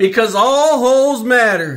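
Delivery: yelling loudly. Repeating a sign-off line after being asked to say it louder: shouting loudly. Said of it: "You can say it louder than that".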